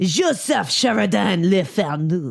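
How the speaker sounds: put-on French accent. Urged by another speaker, the speaker repeats an author's name: french accent. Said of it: "use your French accent".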